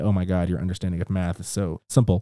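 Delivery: ordinary talk, nothing marked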